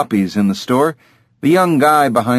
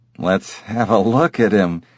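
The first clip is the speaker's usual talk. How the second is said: ordinary delivery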